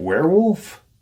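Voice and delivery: stunned, incredulous disbelief, voice shooting way up high. Retelling someone's reply to a grim story, retelling a disbelieving question. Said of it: "in disbelief".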